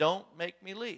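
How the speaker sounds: low guttural voice. Retelling a man's episode, the speaker voices what spoke out of him: low guttural voice. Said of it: "in a low guttural voice".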